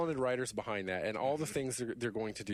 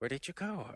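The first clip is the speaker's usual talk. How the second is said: imitated coy childlike voice, higher pitch; 4 semitones higher than usual. Giving examples of game turrets talking: imitating coy childlike turret voice. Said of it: "They have this coy, childlike, you know, voice".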